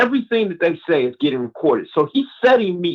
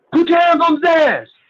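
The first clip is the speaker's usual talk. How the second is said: put-on screaming, higher pitch; 13 semitones higher, 4 dB louder than usual. Retelling a police stop, the officer screaming at the driver: imitating a screaming officer. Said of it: "So he's screaming".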